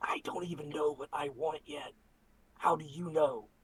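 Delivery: soft, close, private whisper. Whispering to a character after turning him around: whispering in character. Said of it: "I just kinda whisper to him".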